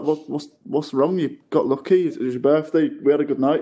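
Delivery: plain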